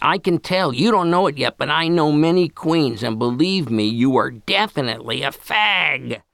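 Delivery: hoarse, screaming voice. Reading a story, a sloshed stepmom yells at Gabby before party guests, raspy smoker's voice, screaming. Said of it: "in that raspy smoker's voice".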